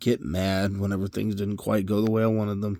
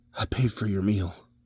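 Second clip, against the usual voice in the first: soft, confiding, hushed stage whisper; 3 dB quieter than usual. Retelling how a stranger leaned in close and half-whispered to her: imitating a half-whisper. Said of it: "leans in real close and whispers".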